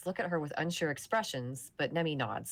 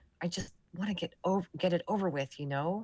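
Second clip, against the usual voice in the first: confiding, just-between-us tone. A young squad member confides in you about her squad: lowered voice. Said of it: "and lowers her voice".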